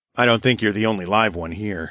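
ordinary delivery

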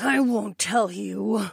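defiant snarl through clenched teeth. Narrator reading Aliana's line to the narrator, snarled through gritted teeth. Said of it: "Aliana snarled through gritted teeth".

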